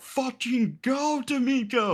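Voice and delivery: put-on very high, urgent yell. Retelling telling a teammate to move during a paintball point: retelling own yell. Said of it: "yelling at him to go".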